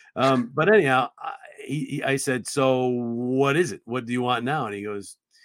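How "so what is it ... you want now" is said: plain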